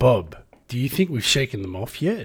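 low, clearly put-on Australian accent. Player asked to do an Australian accent for their character, talking to Bob. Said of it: "Do an Australian accent".

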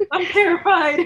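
high, loud laughing in mock terror.

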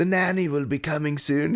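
put-on high, horrible British accent. Retelling checking in their kids while Russell Brand hung out with them, doing a horrible Russell Brand accent. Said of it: "whatever the horrible accent that I'm trying to do".

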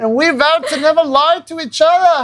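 put-on Swedish accent. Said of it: "his Swedish accent saying".

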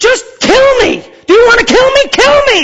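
very high, loud scream at the very top. Recounting screaming at a driver from a bike on the freeway, retelling a scream. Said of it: "And I'm screaming this at him".

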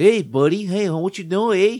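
put-on loud, high, friendly, almost goofy Canadian accent. Imitating a burly guy from up north near Canada, in a friendly, goofy Canadian accent. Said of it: "almost goofy Canadian".

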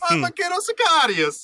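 very high, slow, drawled Italian accent. Joining the joke about the hero speaking: Cato Sicarius in Italian accent. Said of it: "think about him speaking in an Italian accent".

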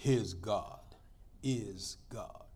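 slow, deliberate, whispered character voice. Retelling a movie scene, the husband's reply in Yul Brynner voice. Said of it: "in the Yul Brynner voice".

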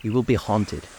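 ordinary talk

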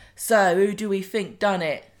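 put-on cheeky London accent. Retelling a scene of a woman in an autopsy room, cheeky London accent. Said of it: "They're all Londoners now".

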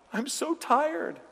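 mock, very high sobbing through tears. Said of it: "and he's crying".

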